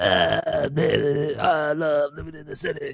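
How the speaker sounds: gritty, very slow, drawn-out vocal line. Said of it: "he's so, like, gritty".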